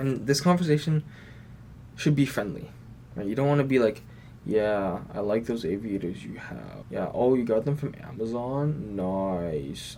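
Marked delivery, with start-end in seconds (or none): 4.5-10.0 slow, dull, unenthused, "nice" drawn out. Showing how not to make friendly conversation, delivered in a flat monotone. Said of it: "That's just kind of monotone".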